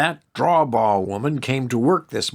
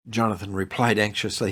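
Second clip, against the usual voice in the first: ordinary delivery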